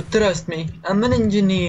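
put-on high Italian man's accent. Gaming with a friend next to a dispenser, in an Italian accent. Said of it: "You sound like an Italian man".

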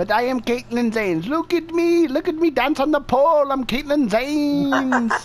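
put-on Indian-sounding accent throughout. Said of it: "You sound like a fucking Indian".

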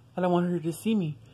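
ordinary talk, nothing marked

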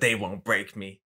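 put-on gruff toy phone voice. Retelling what the little toy phone says to Woody: imitating a gruff voice. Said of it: "all gruff and shit".

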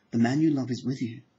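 ordinary talk

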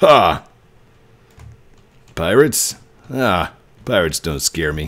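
confident, low, heroic good-guy voice. In a role-play, wanting to be a good guy, not a villain: good guy voice. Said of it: "I have to do a good guy voice".

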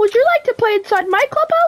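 squeaked out at very high pitch. While gaming with friends, a player breaks into a Mickey Mouse voice. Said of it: "I'm Mickey Mouse!".

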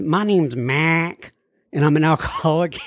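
put-on heavy Southern Texas accent. Retelling a friend introducing himself at a meeting, imitating Mac's deep Texas accent. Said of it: "like deepest of the deep Texas accents".

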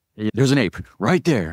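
loud whisper. Retelling what was said on spotting an animal at night: retelling a loud whisper. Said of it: "it's a loud whisper".

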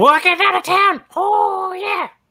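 very high, shrill screaming holler. Playing a character in a field full of people: screaming. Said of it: "And I scream".

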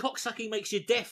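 plain

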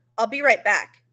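firm, severe tone. Narrator reading the babysitter's line to the child in his care, stern. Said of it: "he told me sternly".

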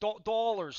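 mock Pittsburgh accent and pronunciation. Teasing another speaker about how he said a word: imitating a Pittsburgh accent. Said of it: "like you're from Don Con".

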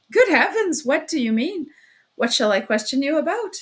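loud cackling with a sudden change of tone. Narrator reads Porfiry Petrovitch answering a man who demands to leave: cackling. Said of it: "cackled Porfiry Petrovitch with a change of tone".

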